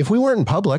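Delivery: jittery, nervous, very high-pitched delivery. Recalling saying something while very nervous: high-pitched voice. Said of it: "I said it in like a mm-hmm. high-pitched voice".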